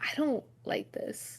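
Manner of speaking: slow, hushed near-whisper. Character perched on Aelin's shoulder, speaking into her ear: speaking quietly, near whisper. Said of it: "whisper into her ear".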